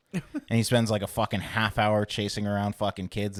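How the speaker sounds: ordinary talk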